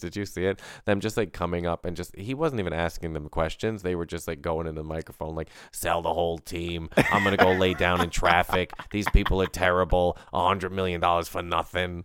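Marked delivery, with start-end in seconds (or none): 5.7-12.0 put-on New York accent. Imitating Phillies fans ranting into a microphone at the stadium: New York accent. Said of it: "I'm doing a New York accent".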